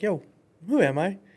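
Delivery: small, high, goofy put-on voice. Describing cheering himself up when overwhelmed, doing his little voice. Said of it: "cause I'll do the little voice thing".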